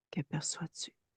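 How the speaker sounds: gentle unvoiced whisper.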